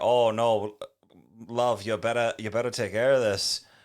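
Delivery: put-on Liverpool accent. Recapping a show, quoting the little fairy guard, Liverpool accent. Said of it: "It's just like his accent".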